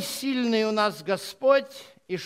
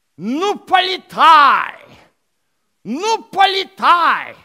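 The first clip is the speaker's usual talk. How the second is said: very loud, slow, booming, self-important pompous boa voice; 5 semitones higher, 10 dB louder than usual. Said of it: "удав таким голосом напыщенным говорит".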